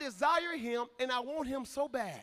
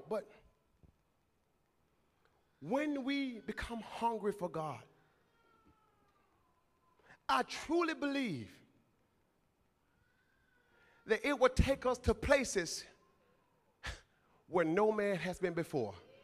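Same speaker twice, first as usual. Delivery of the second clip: deliberate, drawn-out, very slow, word by word; 3 semitones lower than usual. Making a point to the listeners, very slow and quiet. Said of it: "Let me say this very slowly and quietly".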